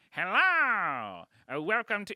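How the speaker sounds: put-on Kazakh accent, very high, loud, swooping. Speaker retells a road host opening a nearly empty show, doing Borat voice. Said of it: "He's doing Borat voice for the whole".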